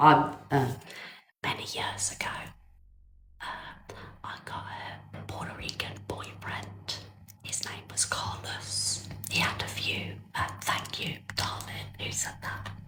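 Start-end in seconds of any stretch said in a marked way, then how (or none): 1.4-12.7 soft, secretive whisper. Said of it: "that's why I'm whispering".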